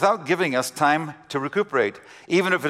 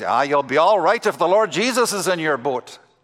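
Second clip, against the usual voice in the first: put-on Irish accent with a preacher's delivery. Retelling what an Irish preacher friend said across a restaurant: booming Irish voice. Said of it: "in his booming Irish voice".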